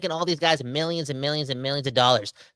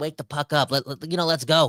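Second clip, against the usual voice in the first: ordinary talk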